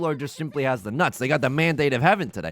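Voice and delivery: ordinary talk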